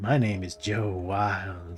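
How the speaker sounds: really creepy, sinister drawl. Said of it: "he's got a really creepy voice".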